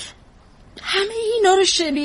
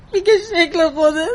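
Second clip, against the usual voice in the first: tearful, crying voice.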